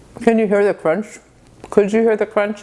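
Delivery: speaking with mouth full, chewing. Taking a bite of a hot buttered muffin: talking with mouth full. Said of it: "It's so rude to talk with food in your mouth".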